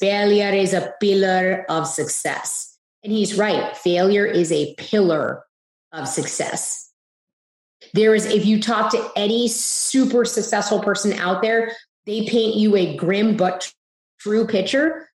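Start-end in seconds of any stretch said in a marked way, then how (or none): 0.0-2.8 put-on Indian accent. Quoting what the speaker's dad always says, in his Indian accent. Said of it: "My dad always says this in his Indian accent".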